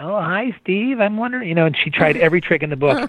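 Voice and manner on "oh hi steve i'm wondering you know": mock sugary, wheedling, coaxing, pitched-up voice. Retelling a woman's calls asking to be taken driving: mock-sweet. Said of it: "she'd try the sweet".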